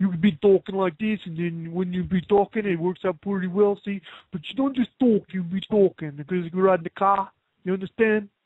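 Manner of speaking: put-on New York accent. Speaker coaches another performer on how to talk, in a New York accent. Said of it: "the New York accent".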